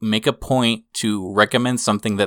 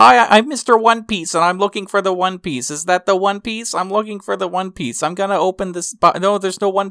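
squeaky, very high-pitched put-on voice; 10 semitones higher than usual. Describing an abridged series parody of Luffy: high-pitched Luffy voice. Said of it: "it was this high-pitched voice where it's just like".

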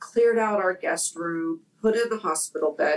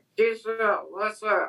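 mock slurred words, acted out; 3 semitones higher than usual. Retelling what a man on morphine said, imitating slurred speech. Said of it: "his speech was slurred".

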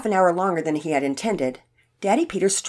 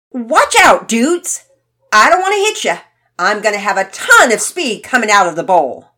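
very loud, cocky, overconfident shout; 3 semitones higher, 10 dB louder than usual. A skater yells across the bowl to others in the skate park, overconfident yell. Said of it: "he yelled across the bowl".

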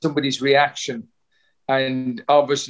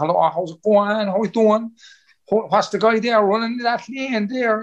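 high, put-on Cork accent, announcer chatter; 7 semitones higher than usual. Speaker imitates the announcer at Cork City Sports, imitating a Cork accent. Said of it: "it's the accent".

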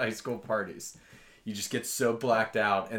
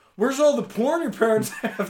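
put-on drunk yelling, high and loud; 14 semitones higher, 7 dB louder than usual. Retelling a drunken guy at a party: imitating a drunk guy yelling. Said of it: "he's just yelling".

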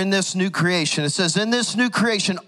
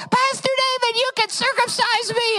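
put-on very high, girlish teenage girl voice. Recounting what a girl said to him last night, imitating a 14-year-old girl. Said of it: "to hear a 14-year-old girl going".

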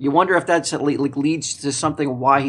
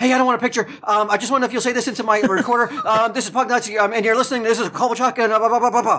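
mock fast nervous rushed speech, higher; 8 semitones higher than usual. Retelling walking up nervous to a player: retelling a rushed nervous request. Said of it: "I think I said everything in, like, one breath".

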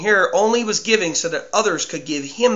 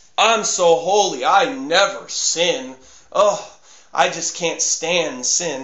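very slow, self-righteous, holier-than-thou pious tone. Acting out someone proud of never sinning: mock self-righteous pride. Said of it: "pride in abstaining from sin".

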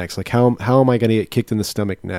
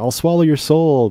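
put-on sweet, innocent, higher young teenage girl voice; 6 semitones higher than usual. Describing a horror film scene, the daughter speaks in an innocent young teenage girl way. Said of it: "she's saying it like this innocent, like young teenage girl way".

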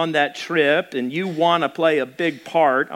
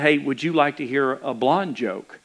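put-on whisper; 3 semitones lower than usual. Telling a joke about a man in a dark restaurant: retelling a whisper. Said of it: "he whispered and said".

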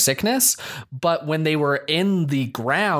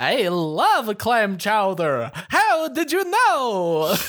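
pitched-up vampire voice with the word know drawn out; 7 semitones higher than usual. Joking about a New England radio story, in a Dracula vampire voice. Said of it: "That's a perfect vampire impersonation".

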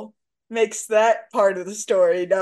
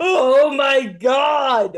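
playful fake shouting, higher; 3 semitones higher, 3 dB louder than usual. Joking back and forth with another speaker: mock yelling. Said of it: "Stop yelling at me".

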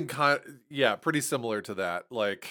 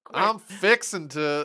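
fake Southern drawl, higher and louder; 6 semitones higher, 4 dB louder than usual. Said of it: "phrase in a Southern accent".

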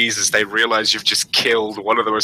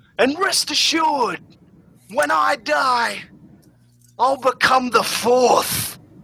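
shouted delivery, higher pitch. Voicing a character addressing a crowd from atop a car: shouting to a crowd. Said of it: "shouts out".

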